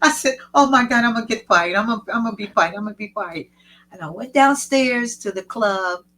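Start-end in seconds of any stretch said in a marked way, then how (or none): 0.5-3.5 put-on panicking, fast, rattled off, tripping over repeats. Retelling what they said on finding the show had started: retelling own panic. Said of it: "I was panicking".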